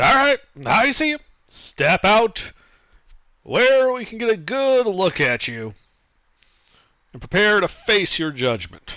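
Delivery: loud, high, swooping calling out. Calling out to unseen phantasms in a misty chamber: calling out loudly. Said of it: "I call out".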